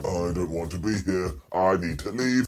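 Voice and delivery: very low, dropped-down robot voice. Retelling what a guest in a suit said on a show, in a Karrion Kross robot voice. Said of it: "he talks like a robot".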